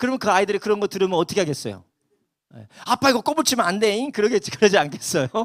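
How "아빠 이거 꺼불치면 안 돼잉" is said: put-on high, chattering child's voice in Jeolla dialect. Act out a child talking to Dad after hearing that speech, imitating a child speaking dialect. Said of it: "그 사투리를 배울 수 있을까".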